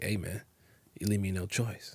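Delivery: confiding, hushed stage half-whisper. Retelling a character half-whispering to Schmidt: imitating Winston half-whispering. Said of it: "He has to whisper to Schmidt".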